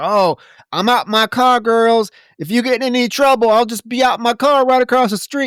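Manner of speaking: very high, loud, dopey, bumbling, odd voice. Retelling what the bumbling deputy says to the girls: imitating a weird, odd deputy. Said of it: "he's real just w-, weird and odd".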